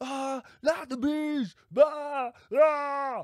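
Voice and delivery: very drawn-out, slow, high screaming wail. Imitating Nick screaming about the bees: screaming as Nick. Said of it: "But he's screaming there".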